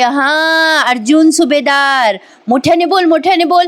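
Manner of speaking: mock very loud shouting. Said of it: "मोठ्या मोठ्याने ओरडते".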